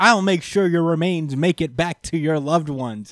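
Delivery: called out at moderate volume, mildly shouted. Retelling a comic scene where a hero shouts at an enemy: imitating a shout. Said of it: "just shouts".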